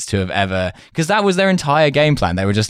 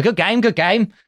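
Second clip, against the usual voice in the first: odd, very high-pitched put-on cockney voice; 12 semitones higher than usual. Recalling a game-show host's catchphrase as he came on, imitating a cockney voice. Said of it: "kind of cockney voice and he would come in and go".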